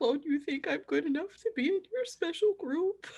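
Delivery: very high, tearful, crying half-whisper under the breath. Voicing a character who is crying, under her breath. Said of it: "Maple's visibly crying and just, like, under her breath".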